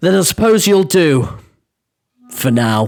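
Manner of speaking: deadpan, flat orc voice. Voicing an orc woman answering an adventurer: rumbling Orcish accent, deadpan. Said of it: "her rumbling Orcish accent and her deadpan delivery".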